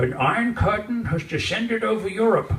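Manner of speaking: put-on loud, hand-muffled old radio broadcast announcer voice. Explaining a Churchill quote to Michael, the speaker does an old radio broadcast imitation. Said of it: "put on my best radio imitation".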